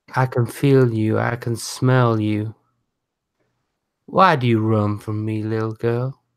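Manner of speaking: echoing voice, as if inside the head. Voicing a presence that speaks to a player: voice echoing in your head. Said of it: "You hear a voice echo in your head".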